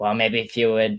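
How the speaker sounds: put-on, imitated Massachusetts accent. Retelling how Dale scolded about sponsors: imitating Dale's Massachusetts accent. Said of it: "he's got that Massachusetts accent".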